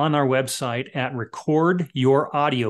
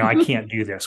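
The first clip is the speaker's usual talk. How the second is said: usual speaking voice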